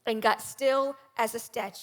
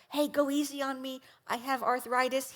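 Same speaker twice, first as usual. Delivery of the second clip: secretive, hushed half-whisper; 4 dB quieter than usual. Retelling a quiet request to the boat driver: imitating a half-whisper. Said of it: "I whispered to the guy driving the boat".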